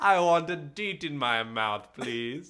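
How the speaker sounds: loud, put-on rich villain voice and accent. Joking that deet is a candy and asking for one, in a villain voice. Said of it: "That's just a villain voice".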